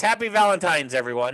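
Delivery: normal talking voice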